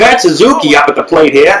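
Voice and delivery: deliberately bad, exaggerated put-on Boston accent. Announcing the batter coming up to the plate, in a wicked bad Boston accent. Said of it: "I could do a wicked bad Boston accent".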